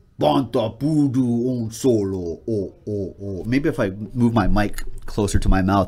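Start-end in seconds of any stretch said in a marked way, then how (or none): 0.2-2.4 put-on alien voice, slower pace. Speaker, playing along at home, does a Jabba the Hutt impression. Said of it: "That's my Jabba the Hutt impression".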